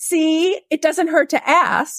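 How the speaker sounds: put-on high, slow voice of a small six-year-old. Retelling what she said as she turned to you, in a little six-year-old voice. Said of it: "in that little 6 year old voice and said".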